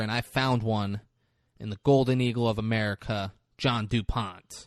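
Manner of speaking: normal talking voice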